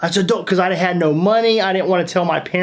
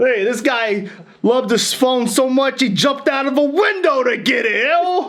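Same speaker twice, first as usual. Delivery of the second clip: put-on New Jersey accent; 6 semitones higher than usual. Retelling how paramedics mocked him: imitating a Jersey Shore accent. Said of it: "straight up Jersey Shore accent".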